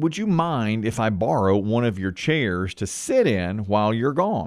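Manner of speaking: plain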